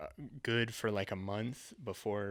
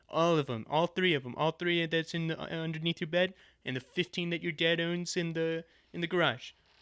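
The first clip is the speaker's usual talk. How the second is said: loud, high, rambling politician bluster, badly done; 7 semitones higher, 6 dB louder than usual. Running with an improvised bit while tired: bad Trump impression. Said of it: "That was also a bad Trump impression".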